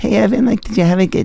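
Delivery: put-on very high, soft, scratchy, raspy girlish voice. Retelling prank calls as a fourth-grade girl: imitating a girl's soft raspy voice. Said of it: "raspy and scratchy".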